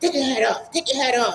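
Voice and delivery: high, stern, officer-like barked yell. Retelling an airport officer's order to remove a hat: imitating an officer yelling. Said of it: "you don't have to yell at me for that".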